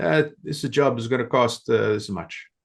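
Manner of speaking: put-on Italian old-timer accent. Retelling what the old Italian owner said to the estimator, old Italian man accent. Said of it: "I can do the accent because I'm Italian".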